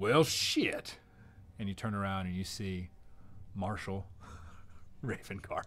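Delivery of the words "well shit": gruff character voice, higher pitch. Game master voicing Marshall Ravencart arriving among a shocked crowd, in a gruff voice. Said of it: "you hear this same gruff voice".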